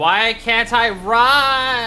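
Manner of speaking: high, slow, drawn-out put-on complaining voice. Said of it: "I'm just like".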